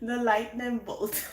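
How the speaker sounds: speech broken by laughter. Turning over the card at the bottom of the deck, laughing while talking. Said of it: "I'm sorry, I'm laughing".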